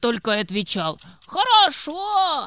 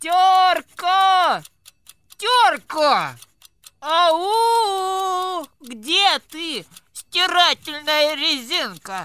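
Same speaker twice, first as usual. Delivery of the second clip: loud, high, slow calling voice with Ау stretched; 6 semitones higher than usual. A character calls out for Terka, shouting. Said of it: "Да не кричи ты!".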